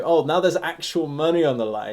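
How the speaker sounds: ordinary talk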